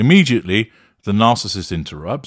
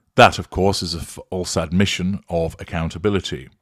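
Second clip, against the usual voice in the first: usual speaking voice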